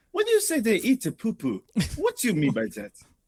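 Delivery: put-on Congolese accent. Acting out a Congolese preacher against LGBTQ: put-on Congolese accent. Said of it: "it's not offensive to do the accent".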